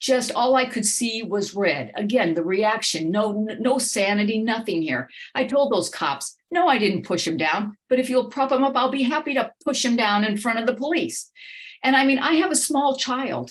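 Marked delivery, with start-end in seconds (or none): 6.5-11.3 heated, defiant, furious anger. Retelling what was told to the police: retelling an angry reply. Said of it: "I got so angry".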